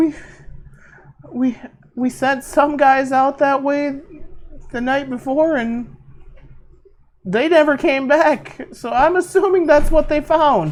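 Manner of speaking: very high, shell-shocked, stammering babble. A captured cultist, questioned about what happened, answers in shock. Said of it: "The cultist is literally still in shock at the mere thought of what just happened. / Does the cultist shit his pants even more when he sees him go back to an elf? / The cultist is literally still in s".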